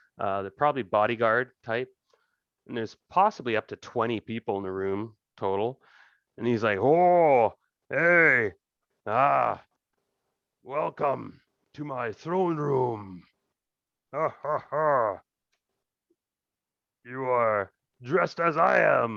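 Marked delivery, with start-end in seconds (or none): 6.8-19.2 very drawn-out, slow, laughing kingly delivery. Voicing a king greeting a guest in his throne room: bellowing laugh while talking. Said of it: "And he laughs, his bellowing laugh".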